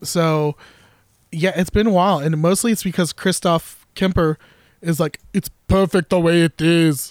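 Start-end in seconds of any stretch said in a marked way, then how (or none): 5.3-7.1 put-on Austrian-sounding German accent. Quoting Christoph Kemper on the product: Christoph Kemper impression. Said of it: "I don't know why he sounds like Arnold Schwarzenegger".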